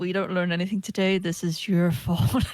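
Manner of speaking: loud, pointed, blaming muttered words. Player's character looks another character dead in the eyes, muttered under breath. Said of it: "just under my breath like".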